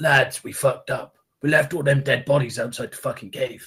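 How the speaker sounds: conspiratorial, confiding plotting tone. A character pulls companions aside, away from the mayor: conspiratorial. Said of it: "I'll conspiratorially grab them all in".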